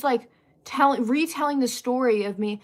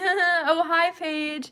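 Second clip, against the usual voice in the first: put-on, awkward laughing through the words; 4 semitones higher than usual. Retelling how a classmate turned around and greeted her: imitating awkward laughing. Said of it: "starts, like, awkwardly laughing".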